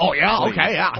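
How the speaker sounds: fake on-air radio announcer voice. Mocking how a radio host answers a caller, imitating a phony radio voice. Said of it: "Just keep the phony radio voice on".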